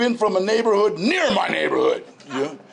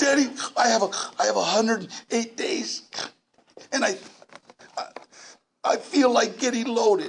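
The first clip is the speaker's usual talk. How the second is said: mock tearful, crying voice; 2 semitones higher, 3 dB quieter than usual. Retelling a late-night phone call from a caller in tears: imitating someone in tears. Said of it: "he's in tears".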